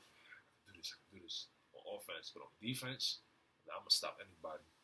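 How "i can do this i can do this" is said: soft, hushed mutter under the breath. Retelling a self-pep talk while playing offense: imitating whispering to oneself. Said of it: "kinda whispering to myself".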